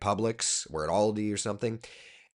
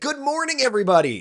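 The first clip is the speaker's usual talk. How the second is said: very high, loud, pushed, big-energy TV anchor voice; 6 dB louder than usual. Showing how they pick up their voice broadcasting on TV, big on-air TV voice. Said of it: "I pick up my voice on T V".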